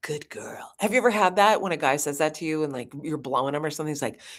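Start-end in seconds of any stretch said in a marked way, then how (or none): 0.0-0.7 hushed, breathy whisper in a man's manner. Retelling a line said to a reading partner: channeling a man. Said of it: "I was channeling, like, a man".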